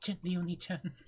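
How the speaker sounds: put-on, typical anime girl character voice. Answering a prompt to do one: typical anime girl impression. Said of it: "Do a typical anime girl impression".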